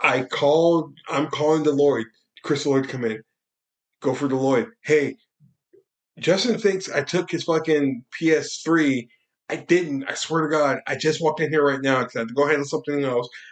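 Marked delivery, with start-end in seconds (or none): none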